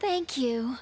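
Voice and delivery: sweet-sounding tone of voice. Thanking the other speaker after praise for being strong: sweet tone. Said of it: "the way she said "thank you." That was sweet".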